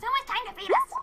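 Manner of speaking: very high, demanding, yelling cat voice. Retelling how the cat demands to be fed: imitating a cat yelling. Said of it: "The cat is yelling at me like".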